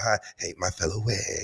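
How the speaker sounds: low, hushed mutter under the breath. Recounting a comment slipped when Giselle walked into a bar, low, under the breath. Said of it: "all low like that".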